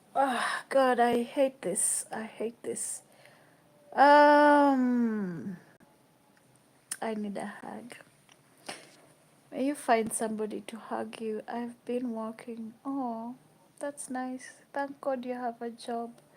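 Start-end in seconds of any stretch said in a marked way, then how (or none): 0.1-7.9 very slow, loud, tearful breaking down. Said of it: "I hate breaking down like this".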